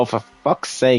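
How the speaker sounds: put-on high Irish accent throughout. Retelling what Kevin said after being told to turn it off, imitating Kevin's Irish accent. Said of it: "in his Irish accent".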